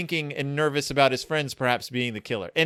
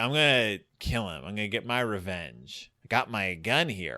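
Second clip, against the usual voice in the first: put-on drunk voice, lower and quieter; 5 semitones lower, 5 dB quieter than usual. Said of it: "He's very drunk".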